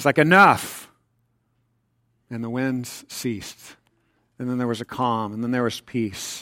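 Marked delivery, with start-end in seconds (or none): 0.2-0.9 mock regal, authoritative, commanding tone. Acting out a king silencing the wind: acting out a kingly command. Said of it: "it's kingly".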